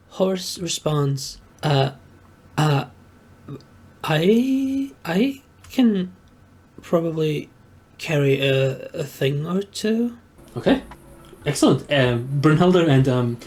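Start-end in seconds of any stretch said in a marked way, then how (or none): 1.6-10.2 stuttering, stammering delivery.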